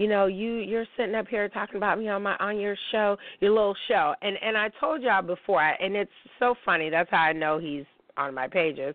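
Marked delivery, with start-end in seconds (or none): none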